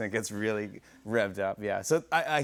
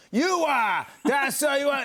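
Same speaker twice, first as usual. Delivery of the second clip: very high, loud, swooping caricatured Boston accent; 6 dB louder than usual. Mocking a stereotype of how people in Boston talk: caricatured Boston accent. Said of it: "that's a caricature".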